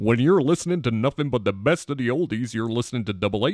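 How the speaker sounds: smooth, classic radio DJ announcer voice. Retelling a man who did radio lines for people for a dollar, in his beautiful radio voice. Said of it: "he just had this beautiful radio voice".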